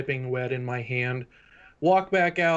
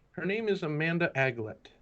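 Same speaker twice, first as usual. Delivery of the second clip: hushed, secretive half-whisper; 2 semitones higher, 5 dB quieter than usual. Asking a contact in character about someone being sought: half-whispering in character. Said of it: "I say that quietly enough so that".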